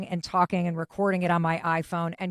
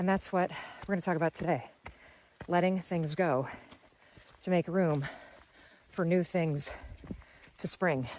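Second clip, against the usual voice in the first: huffing and puffing between words, breathless, halting, soft; 5 dB quieter than usual. Host recording an episode while out on a trail, huffing and puffing. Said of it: "I am huffing and puffing so much on this trail".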